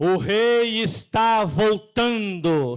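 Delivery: very loud, thunderous, booming prophet voice. Leading worship, the speaker tells listeners to address their brother: prophet's thunder voice. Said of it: "com voz de profeta e aquele voz de trovão".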